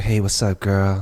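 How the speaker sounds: deep, smooth, suave cool-guy voice. Retelling how a friend's high voice changed: imitating a suave deep voice. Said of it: "his high voice turned to".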